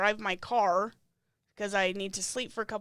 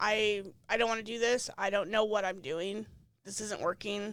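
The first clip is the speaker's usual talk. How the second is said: acted-out tearful, crying breakdown. Recounting pulling the case manager aside, the speaker retells breaking down crying. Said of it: "and I break down and I'm crying".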